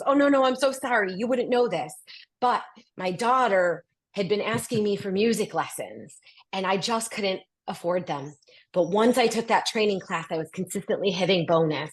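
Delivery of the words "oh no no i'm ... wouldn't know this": a little flustered, words tumbling out, pitched up. Telling about her daughter's music lessons, imitating a flustered apology. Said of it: "it gets a little flustered and goes".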